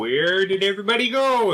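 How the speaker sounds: put-on high, small, childlike little kid voice. Describing their character's reaction to the others; little kid's voice. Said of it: "it comes out in a little kid's voice".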